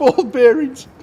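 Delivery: high, slow delivery laughing through words. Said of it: "I'm laughing so much".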